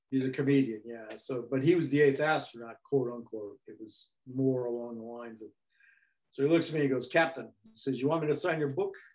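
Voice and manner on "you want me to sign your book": heavy put-on Spanish accent, strongly exaggerated. Recounting meeting comedian Bill Dana, who offers to sign his book: imitating Bill Dana's accent. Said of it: "He's got kind of this panic accent".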